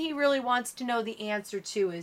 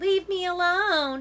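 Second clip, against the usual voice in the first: put-on whiny, high-pitched voice; 6 semitones higher, 3 dB louder than usual. Natalie mocks the narrator by repeating their words in a whiny, fakey voice. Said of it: "in a whiny, fakey voice".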